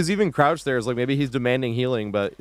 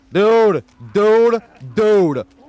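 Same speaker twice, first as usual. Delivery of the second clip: shouting, higher and louder; 8 semitones higher, 8 dB louder than usual. Yelling at a teammate in a game: yelling at a teammate. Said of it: "I'm yelling at a bot".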